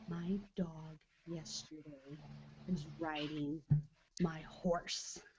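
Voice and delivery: secretive, slow, very soft half-whisper. Retelling what Julian half-whispered in the speaker's ear: imitating Julian's half-whisper. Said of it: "he's whispering in my ear".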